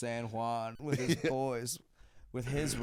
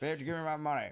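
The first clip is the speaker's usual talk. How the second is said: much higher, old-timey, put-on 1940s-style voice; 3 semitones higher than usual. Imagining smoking in a bank and demanding money: old-timey forties voice. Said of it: "I don't know what voice".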